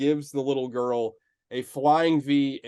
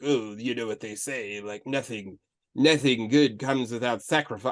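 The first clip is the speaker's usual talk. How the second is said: deep, arch villainous voice; 4 semitones lower than usual. Retelling a film villain's line, doing a Vincent Price voice. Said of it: "he sounds like Vincent Price".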